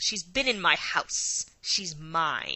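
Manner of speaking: snarling beast voice, swooping. A narrator reads a male character's line from a story, snarling. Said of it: "He snarled".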